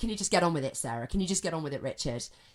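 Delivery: quick-fire, rapid, rushed, very fast speech. Showing how someone might come across to Sarah and Richard, speaking really quickly. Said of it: "speaking really quickly like that".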